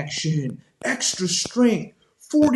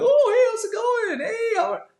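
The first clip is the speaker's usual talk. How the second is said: squeaky, very high, forced polite voice. Describing being polite to people worse off, imitating own really high voice. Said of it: "My voice gets really high".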